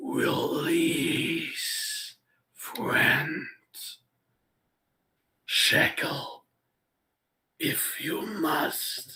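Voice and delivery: very slow, rasping, rumbling beast growl. Narrating a scene, voicing the beast as it begins to speak: rumbling, rasping voice. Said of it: "in rumbling, rasping voice".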